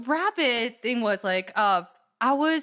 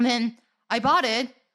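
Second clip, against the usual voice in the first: usual speaking voice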